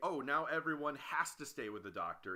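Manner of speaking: usual speaking voice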